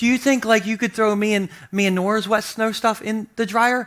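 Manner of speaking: mock sweet, gentle little tone. Retelling what his wife asked about the dryer: imitating wife speaking sweetly. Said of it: "real sweet".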